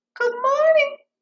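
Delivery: nice, very high little bunny voice. Retelling the bunny's greeting to the bullfrog in the story, high bunny voice. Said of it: "Bunny had that nice high voice".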